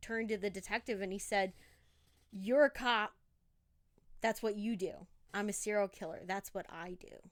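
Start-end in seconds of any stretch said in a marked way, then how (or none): none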